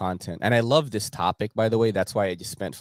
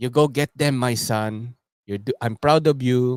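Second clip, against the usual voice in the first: put-on Filipino accent; 4 semitones higher, 4 dB louder than usual. Imitating his late father cheering him on, Filipino accent. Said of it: "He's got, like, the Filipino accent".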